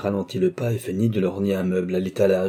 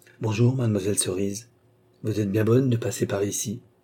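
ordinary delivery

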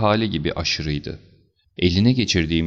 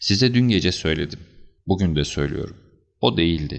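usual speaking voice

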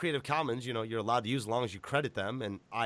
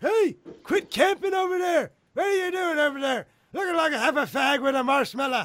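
put-on very high, shrill, loud hollering old man voice; 9 dB louder than usual. Demonstrating an old man prank call to a Call of Duty player, in an old man voice. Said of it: "I need to do old man prank calls".

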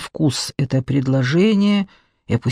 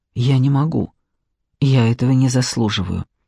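ordinary delivery, nothing marked

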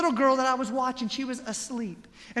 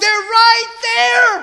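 full-on screaming, high and very loud; 10 semitones higher, 13 dB louder than usual. Retelling screaming at her while pouring Goldfish crackers, reenacting own scream. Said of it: "I'm screaming at her".

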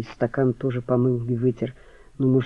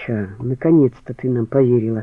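plain

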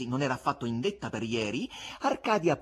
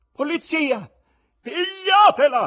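high, very loud, terrifying, dreadful scream; 12 dB louder than usual. A narrator reads the wife calling for the police, screaming terribly. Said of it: "urlò la moglie con voce così tremenda".

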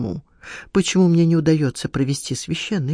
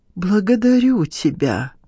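unsteady, shaking, trembling, quavering voice; 2 semitones higher than usual. After listening long and finally nodding, he gives his thanks in a trembling voice. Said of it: "проговорил он дрожащим голосом".

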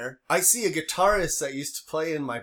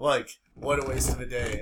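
mock sigh, lower pitch; 3 semitones lower than usual. Retelling what the judge said after a guilty plea; retelling the judge's sigh.

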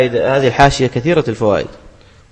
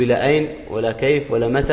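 plain

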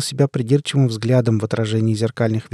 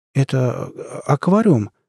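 voice trembling a little, slightly shaky; 2 semitones higher than usual. A young man, greeted with a handshake, asks a question in a slightly shaky voice. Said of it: "немного дрожащим голосом проговорил Лука".

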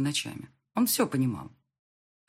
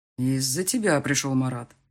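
plain reading voice

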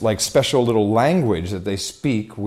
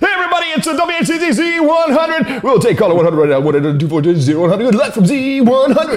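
high-pitched, shrill, loud, hyped radio DJ scream; 6 dB louder than usual. Imitating broadcast radio hosts heard in the studio, screaming like a radio DJ. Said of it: "they're screaming most of them, like".

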